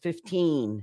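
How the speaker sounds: put-on the word fifteen with stress on the -teen syllable. Pronunciation lesson on teens versus tens: stress on teen in fifteen. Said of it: "to stress the teen".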